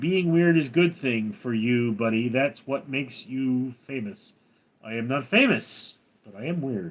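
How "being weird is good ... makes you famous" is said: ordinary talk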